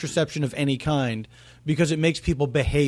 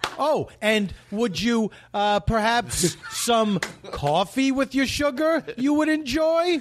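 slow, stalling, hesitant delivery, pitched up; 8 semitones higher than usual. Imitating Andy Kindler drawing out a joke: imitating Andy Kindler stalling. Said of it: "I love when Andy is doing anything where he's, he's, like, trying to get it out".

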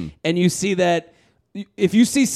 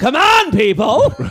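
hollering high and loud; 8 semitones higher, 6 dB louder than usual.

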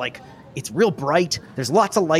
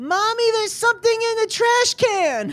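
put-on tiny, very high-pitched little kid voice. A narrator voices a little kid calling to Mommy: little child's voice. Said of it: "you hear a little voice".

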